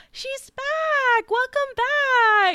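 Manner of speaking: very high, very slow fake-nice voice, drawn-out "back". Recapping a TV episode, imitating Katie in her put-on nice PTA-mom voice. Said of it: "like a PTA mom putting on her nice voice".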